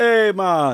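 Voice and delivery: loud, bad put-on Jamaican accent. Describing a Jamaican family who once lived here, voicing them: attempted Jamaican accent. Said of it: "That's why I just do the hey, man".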